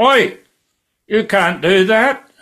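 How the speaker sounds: very high, loud, drawn-out, carrying acted yell. Retelling catching someone wheeling a bike away, retelling a yell. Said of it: "I yelled out".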